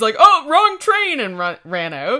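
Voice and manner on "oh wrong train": put-on panic, very high-pitched and very loud blurt. Retelling how a thief fled when caught: imitating a panicking thief. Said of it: "started panicking".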